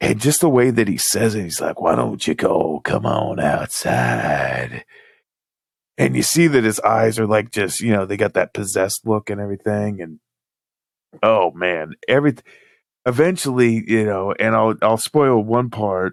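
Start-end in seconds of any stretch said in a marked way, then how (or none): 1.8-4.8 very deep, rough, slow gravelly growl. Retelling a man hammering on the door at two in the morning, gravelly voice. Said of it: "he's got like this gravelly voice".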